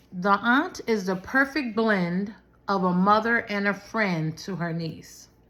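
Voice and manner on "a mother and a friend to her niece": ordinary talk, nothing marked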